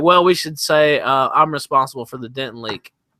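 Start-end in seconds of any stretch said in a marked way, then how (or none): none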